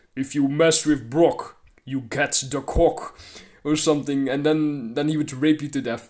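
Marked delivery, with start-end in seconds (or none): 0.2-3.2 really heavy, weighty voice laid on thick. Voicing a made-up character's catchphrase: Brock's really heavy voice. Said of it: "imagine this guy saying this with, like, a really heavy voice".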